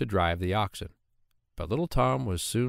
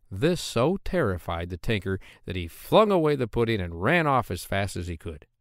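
usual speaking voice

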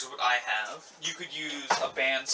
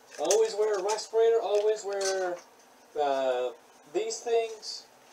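muffled, pitched-up masked voice; 7 semitones higher than usual. Speaking louder while wearing a respirator: muffled through a respirator. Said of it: "now I'm all muffled".

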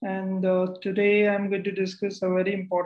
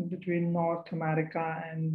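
ordinary delivery

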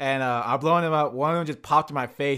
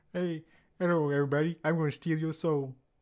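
put-on evil puppet voice, quieter; 2 semitones higher, 5 dB quieter than usual. Adding a line to a description of the game's evil Muppets: evil Kermit voice. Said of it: "you get, uh, like, evil Kermit".

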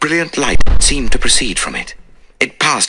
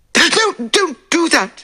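very high, drawn-out, gasping voice. A narrator reads her reply as Poirot locks the door, gasping. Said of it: "she gasped".

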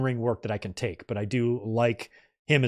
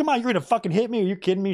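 indignant, pissed-off, angry, high-pitched outburst; 8 semitones higher than usual. Recapping a backstage scene, voicing one woman's reaction, mock-angry retold outburst. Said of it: "She's all pissed off".

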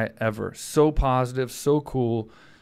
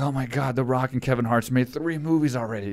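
put-on frantic, panicking, freaking-out outburst. Retelling a video where Will Smith waits to be called on set: imitating frantic Will Smith. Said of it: "all frantic".

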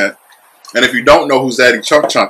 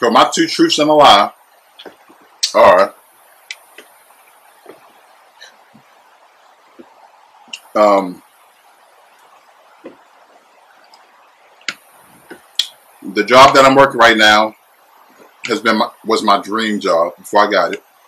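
speaking with mouth full, chewing. Telling two truths and a lie while eating: eating while talking. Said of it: "while I'm eating".

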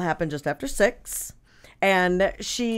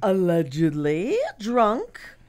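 put-on old-Hollywood starlet voice, swooping. Telling a story about a woman, quoted in Kim Novak voice. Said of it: "that was my Kim Novak voice".

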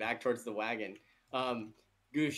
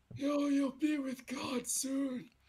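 put-on old man voice, pitched much higher. Game narrator voicing a figure grabbing the player from behind, old man voice. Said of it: "You hear this old man voice".

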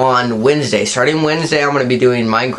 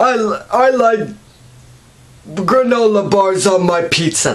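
put-on grandpa voice, much higher, slower; 7 semitones higher than usual. Comparing two grandpa characters, doing the second one: Grandpa Buscus voice. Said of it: "and then like Grandpa Buscus".

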